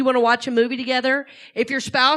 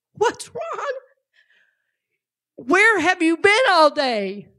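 high, swooping, tearful, fuming outburst; 6 semitones higher than usual. Retelling a daughter's complaint to her dad after mini golf: imitating a crying, fuming daughter. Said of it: "She was, like, crying".

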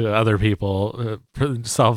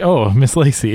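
shy character voice, louder; 2 semitones higher, 5 dB louder than usual. Voicing a bashful reporter greeting a character: bashful character voice. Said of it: "a little bashful".

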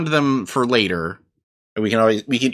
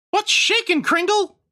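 put-on elf voice, pitched very high. Voicing an elf in a group game, greeting another character: elf voice. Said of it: "I do an elf voice".

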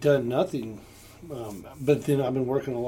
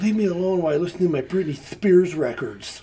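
mock angry, high-pitched, mad girl voice; 5 semitones higher, 4 dB louder than usual. Retelling a babysitting girl's line from a show: imitating an angry girl. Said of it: "she's all mad".

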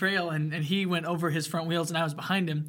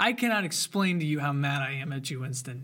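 dry, tongue-in-cheek sarcastic tone; 3 semitones lower than usual. Speaking to winston on camera, for the viewers' benefit: sarcastic. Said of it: "I hope my sarcasm is coming through to the viewer".

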